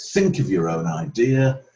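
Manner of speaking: normal talking voice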